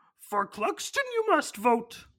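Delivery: poorly done put-on voice, high-pitched and swooping. Imagining Frank Oz narrating a campaign advertisement, Yoda voice. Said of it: "A bad Yoda impression this is".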